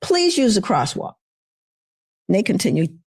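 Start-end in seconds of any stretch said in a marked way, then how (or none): 0.0-1.1 high-pitched, called-out yell. Retelling how the speaker's son yelled at a couple crossing mid-street: retelling a yell. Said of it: "And he yells at them".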